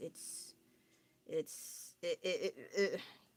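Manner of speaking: very slow, hesitant, reluctant whisper. Explaining an outfit she is unsure about wearing in public: hesitant. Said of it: "hear in my voice why I'm a little hesitant".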